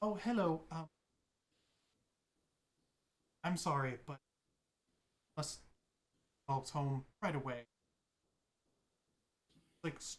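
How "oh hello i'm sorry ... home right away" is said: put-on jittery, hesitant elderly man voice with ums. Voicing an older gentleman who walks up to the table: nervous older gentleman. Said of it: "he looks like a very nervous person".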